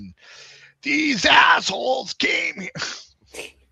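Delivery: very high-pitched, slow, drawn-out scream. Recall a bit you laughed at, Gilbert Gottfried as Abe Lincoln, in a Gilbert Gottfried screaming voice. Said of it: "as Abe Lincoln in his screaming voice".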